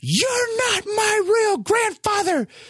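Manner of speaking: put-on very high, drawn-out little-kid yell. Retelling a childhood fight with a step-grandfather: imitating a child yelling. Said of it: "I looked at him and I yelled".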